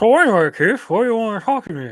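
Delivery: mouth stuffed with food. Reading a character's line after being asked: talking with mouth full of cookie. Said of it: "read this as you're stuffing a cookie in your mouth".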